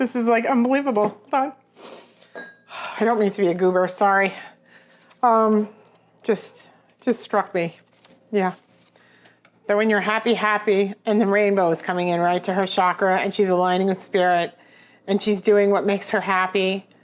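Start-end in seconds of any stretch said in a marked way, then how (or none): 0.0-7.8 overcome, tearful, choked-up voice, words catching. Speaking to people the speaker is so happy for, tearing up. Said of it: "I'm like tearing up".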